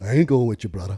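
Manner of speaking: mock Hawaiian accent, laid-back. Asked who will come check the window, Jason refuses: Jason's Hawaiian accent. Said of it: "doing Jason's Hawaiian accent".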